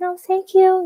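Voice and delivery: tiny, airy, very high voice. Retelling how she answered people yelling congratulations before running off, imitating her little airy voice. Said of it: "in her like little airy voice".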